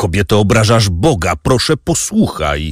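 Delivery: ordinary delivery, nothing marked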